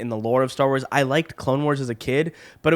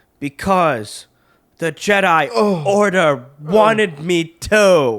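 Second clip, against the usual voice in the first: put-on stilted movie-hero voice, higher and louder; 4 semitones higher, 5 dB louder than usual. Retelling a movie scene between Padme and Anakin: off-putting Anakin line delivery imitation. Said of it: "made Hayden Christensen more off-putting".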